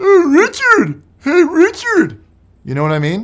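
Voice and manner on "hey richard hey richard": put-on very high, very slow, swooping, drawn-out annoying kid voice. Imitating the kids who all sound the same: imitating the kids' same voice. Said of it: "They always sound like that".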